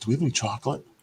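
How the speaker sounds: murmured stage whisper. Retelling a half-whispered question asked during the show: imitating a half-whisper. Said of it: "he whispered to me".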